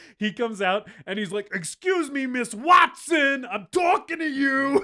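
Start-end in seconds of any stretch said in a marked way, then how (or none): 1.5-4.9 put-on loud, high yelling in thick New York accent. Retelling a movie character scolding Miss Watson: retelling a yell in thick New York accent. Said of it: "yelling at someone in a thick New York accent".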